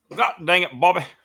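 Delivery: very loud, high, belting cartoon dad voice. Someone asks whether you can do the voice, so do a Hank Hill impression. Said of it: "can you do a, a old Hank Hill?".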